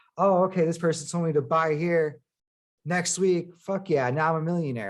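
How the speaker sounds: plain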